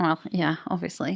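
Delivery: put-on casual, offhand manner. Retelling a character's reply about magic: imitating a nonchalant reply. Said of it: "he says it quite nonchalantly".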